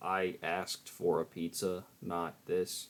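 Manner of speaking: flat, level, slow monotone. Describing the speaker's character Metal's way of talking: Metal's flat monotone. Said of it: "it mainly talks like this, ... He's very like monotone, ... his delivery is very flat".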